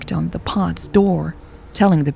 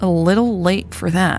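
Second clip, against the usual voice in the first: wry, dry, sarcastic retort; 2 semitones higher than usual. A woman answers another woman's warning, speaking sarcastically. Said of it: "Carmen said sarcastically".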